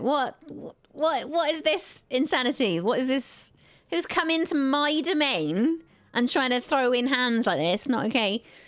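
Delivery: gleeful, high-pitched, cackling sorcerer voice. Voicing a mage who turns around and notices the players, cackling mage. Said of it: "he starts cackling. He's like".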